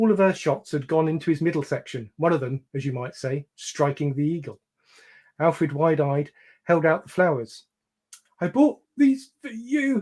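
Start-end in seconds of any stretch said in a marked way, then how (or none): 8.4-10.0 put-on very high, breathless, wheezing gasp. Having been shot by her, a man holds out flowers to her, wheezing. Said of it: "he wheezed".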